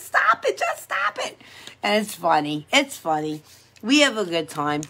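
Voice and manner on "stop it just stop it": mock very high giggling, laughing voice. Retelling how she protested during the heel scrub, imitating laughing while protesting. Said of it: "I can't stop laughing".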